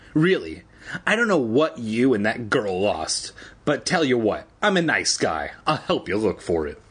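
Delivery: ordinary talk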